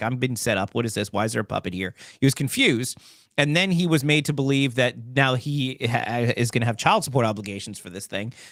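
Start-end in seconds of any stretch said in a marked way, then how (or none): none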